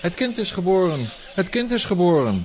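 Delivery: high-pitched calling out. Guards rush to their terrible master, calling out.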